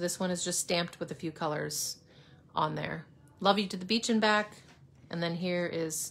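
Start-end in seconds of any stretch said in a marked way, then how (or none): none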